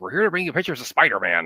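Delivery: put-on, loud, gruff newspaper editor voice. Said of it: "in our best J J J voice".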